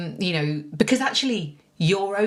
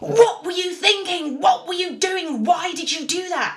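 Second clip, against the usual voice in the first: furious, angry scolding barrage; 13 semitones higher, 4 dB louder than usual. The speaker retells a man berating her after a fall, imitating an angry scolding. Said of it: "And he is so angry with me".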